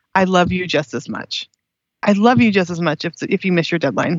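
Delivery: put-on whisper, the gentlest possible. Retelling what God seemed to say: retelling the gentlest whisper. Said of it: "the gentlest whisper was".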